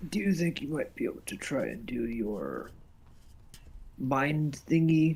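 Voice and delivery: whispered, put-on character voice. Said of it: "I'm gonna whisper in her ear".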